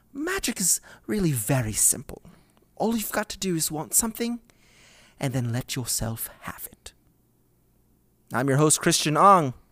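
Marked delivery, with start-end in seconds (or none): 0.1-6.9 put-on gentle, soft, kindly, magical old lady reading voice. The host reads a quote aloud to share it, in a nice magical old lady voice. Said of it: "I'll try to read it like a nice, magical old lady".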